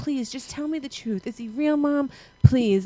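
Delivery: put-on child's pleading, begging voice, repeated over and over. A mother retells how her son kept begging her, imitating a child begging. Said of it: "he just kept begging me".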